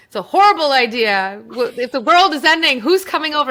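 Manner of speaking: loud, high-pitched, mocking yell.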